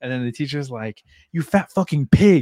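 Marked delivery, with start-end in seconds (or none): 1.3-2.4 play-acted fed-up, loud, shrill, furious tone. Retelling a fed-up substitute teacher's insult: imitating a mad teacher insulting. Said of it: "She's fucking mad".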